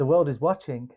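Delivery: ordinary talk, nothing marked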